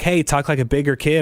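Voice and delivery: ordinary delivery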